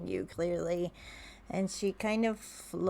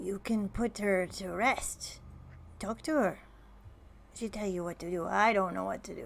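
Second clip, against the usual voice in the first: gnome-like fantasy creature voice, crab-like. Voicing a crab that answers a question, in a gnome voice. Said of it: "Why am I talking like a gnome?".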